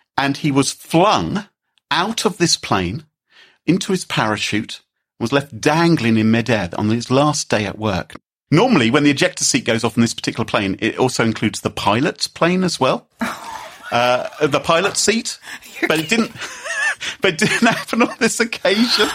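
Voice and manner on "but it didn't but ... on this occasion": high, giggling through the words. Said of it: "I'm laughing here".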